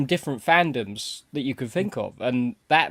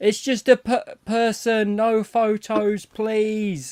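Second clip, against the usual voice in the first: high, drawn-out shout; 9 semitones higher than usual. Retelling what a woman at the con shouted: imitating a woman shouting. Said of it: "she was shouting".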